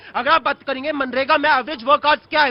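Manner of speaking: ordinary talk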